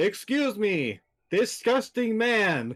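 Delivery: loud, high, very slow, very drawn-out call-out. Calling out again to a character in a game: louder, calling out. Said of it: "she'll say it again louder in his direction".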